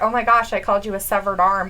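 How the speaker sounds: ordinary talk, nothing marked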